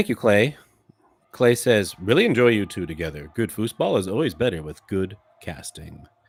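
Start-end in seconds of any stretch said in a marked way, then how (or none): 2.0-6.1 broadcast-style sports announcer play-by-play voice. Reading out a listener's comment about their casting, in an announcer voice. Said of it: "That's my announcer voice".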